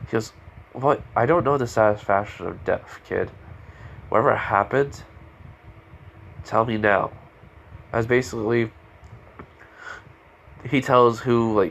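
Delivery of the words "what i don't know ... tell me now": plain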